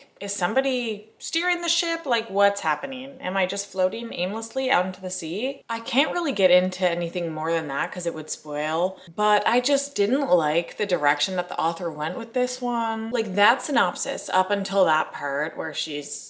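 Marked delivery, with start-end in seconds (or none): none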